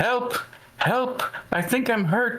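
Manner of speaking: very high-pitched, drawn-out yell. Playing a character pounding on a door, in-character yell for help. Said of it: "and yell".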